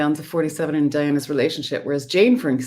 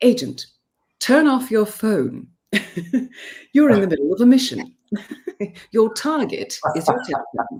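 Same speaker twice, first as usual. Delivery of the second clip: put-on English accent, pitched up; 6 semitones higher than usual. Asked about the two characters' dynamic, giving an example line to the agent: Diana English accent. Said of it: "I need to put on an English accent".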